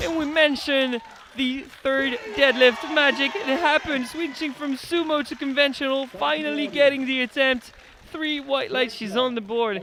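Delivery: loud, high, thrilled commentary-style shout.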